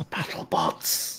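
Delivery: whispered, barely voiced, soft. Voicing a gasping woman character in the game: whispering.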